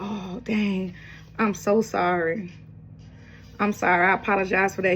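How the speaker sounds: put-on, profusely apologetic, backpedaling tone. Retelling how a man from the past apologized: imitating someone apologetic. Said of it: "He was very apologetic".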